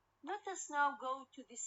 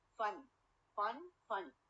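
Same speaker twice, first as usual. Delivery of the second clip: FUN in funny stressed, with falling tune. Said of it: "The first syllable is stress".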